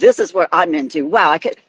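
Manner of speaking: ordinary talk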